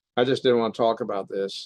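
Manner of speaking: ordinary talk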